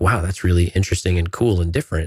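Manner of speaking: usual speaking voice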